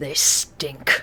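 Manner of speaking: breathy, growled, disgusted whisper. The game master voices a hobgoblin captain speaking to Chara: growling hobgoblin captain. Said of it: "he kind of growls for a moment".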